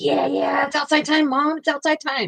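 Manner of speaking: high, rambunctious, overexcited dog voice. Retelling the dog wanting to go out: imitating a rambunctious excited dog. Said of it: "he goes up all rambunctious".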